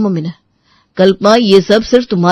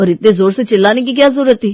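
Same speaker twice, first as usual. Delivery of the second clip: usual speaking voice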